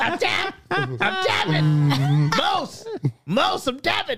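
very high-pitched squeal swooping up and down. Answering how an imagined fight ends, tapping out: Dave Chappelle impression. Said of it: "That's my Dave Chappelle impression".

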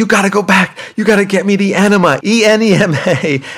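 put-on shrill, very high, drawn-out yelling. Retelling yelling at her over the wrong item: retelling a yell. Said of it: "And I'm yelling at her".

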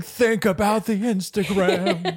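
high, slow, stretched-out mock eager voice.

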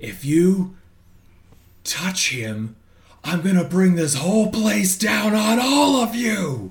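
furious, out-of-control, loud, drawn-out, unhinged yell. Voicing a character in a rage threatening henchmen: unhinged enraged yell. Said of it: "I'm just gonna yell".

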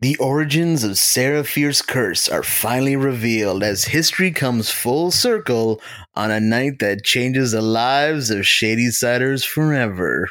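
eerie, spooky horror movie-trailer voiceover. A podcast co-host reads a film synopsis for a review, scary trailer voiceover. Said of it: "slowly slip into like a scary voiceover".

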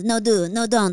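put-on Spanish-accented actor voice. Joking about a famous actor inviting the other speaker: Javier Bardem impression. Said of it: "It's a great Javier Bardem impression".

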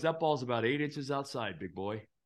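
put-on smart-ass attitude. Retelling an argument over a pitch, the speaker imitates the other man's smart-ass reply. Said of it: "he was obviously being a smart ass".

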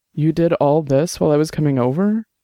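ordinary delivery

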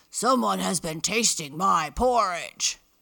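loud, growling bear voice. Narrator reads the Big Bear's line on finding his porridge bowl: growling. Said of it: "he growled out".

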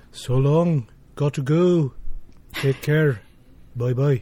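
pleasant Liverpool accent. Asked to say goodbye to the hosts in a Liverpudlian accent: Liverpool accent. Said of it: "say goodbye to us with a really nice, what is it? Liverpudlian accent".

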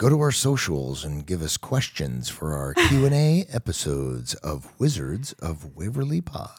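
deep, slow movie trailer voice. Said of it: "I can also do my movie trailer voice".

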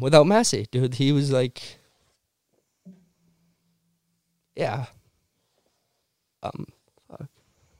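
choking up, getting emotional. Remembering a late mentor who shaped the speaker's snowboarding: choking up with emotion. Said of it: "sorry to get emotional".

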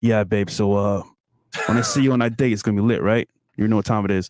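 put-on low, deep seductive voice. Imitating friends whose voice changes on a FaceTime call: put-on deeper, seductive voice. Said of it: "deeper voice is like".

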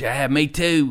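bad, fake, terrible Australian accent. Retelling what a man said back to the speaker, in a terrible Australian accent. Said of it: "I'm going to do a terrible Australian accent".

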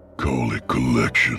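guttural, throaty tone. A gunman raising his revolver at a frightened bandit answers in a guttural voice. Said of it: "he said in his guttural voice".

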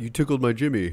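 dopey, dim surfer-dude voice. Retelling what JPJ said on the episode: stupid surfer voice. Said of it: "He sounds like a stupid surfer".

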